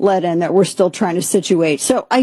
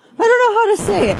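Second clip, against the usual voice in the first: very high, squeaky cartoon mouse voice; 13 semitones higher than usual. Talking to the group when the voice suddenly sounds like Mickey Mouse. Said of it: "I don't know why I turned into Mickey Mouse".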